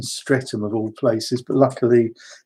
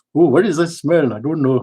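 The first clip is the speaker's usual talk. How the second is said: put-on Indian English accent; 3 semitones higher than usual. Retelling what an Indian man said about a smell in the hall, Indian accent. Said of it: "so I can do the accent".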